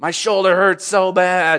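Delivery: put-on high, agonized voice wracked with pain. Retelling how a man answered when asked if he was okay, imitating someone in pain. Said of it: "He was in so much pain".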